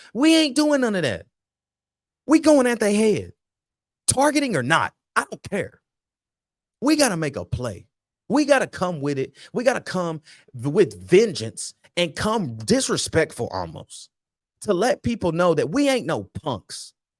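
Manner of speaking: hard, aggressive, high-pitched delivery. Speaker talking about the team's defense, aggressive. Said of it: "y'all can hear the aggression in my voice".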